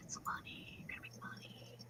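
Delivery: soft, nagging whispered voice. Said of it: "But then you get the little voice".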